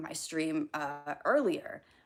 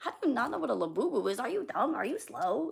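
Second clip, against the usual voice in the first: mock condescending, mean, scornful, talking-down tone; 7 semitones higher than usual. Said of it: "it's so condescending and mean".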